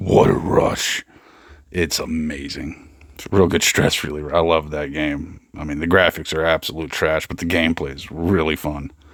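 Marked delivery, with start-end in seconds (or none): 0.0-1.0 small, villainous, evil-sounding voice. Describing a game's voice that talks over you while you play, little evil voice. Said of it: "having a little evil voice like talk over you and be like".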